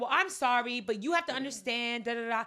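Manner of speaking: put-on, still heated, loud and worked up. Retelling a first apology video from someone: imitating someone still turned up. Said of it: "He was still real turned up on it".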